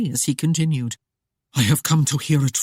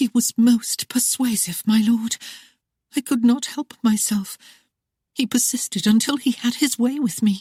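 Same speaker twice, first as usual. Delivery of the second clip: meek, timid voice, slightly high pitch; 7 semitones higher than usual. Reading a story aloud, a wife answering her husband: timid voice. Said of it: "answering him in a timid voice".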